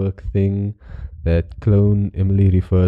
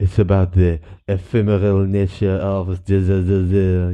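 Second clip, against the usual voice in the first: slow fake French accent, "the" stretched out. Imagining what a pretentious artist of the future would say, in a put-on French accent. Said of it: "I don't know why I did a French accent".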